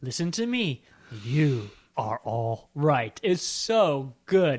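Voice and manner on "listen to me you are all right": put-on mesmerizing actor-like voice, lower. Retelling a film speech that mesmerizes another character: imitating Ian McShane's speech. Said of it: "He goes".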